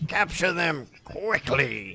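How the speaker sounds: high-pitched, croaking frog-creature voice. A game master voices a frog-like humanoid calling to its companions, croaking. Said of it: "you hear one of them croak out".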